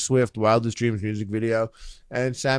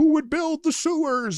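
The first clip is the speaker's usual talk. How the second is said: very high, nasal whine, pitched way up. Describing a clip in a workout video: Jordan Peterson impression. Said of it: "Jordan Peterson's fucking high-pitched, weird little nasally voice".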